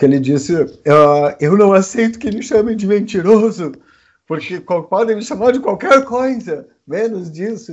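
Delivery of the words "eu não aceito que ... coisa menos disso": high, mock very serious voice on the verge of crying. Retelling a part of Bolsonaro's speech, imitating him almost crying. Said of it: "quase chorando".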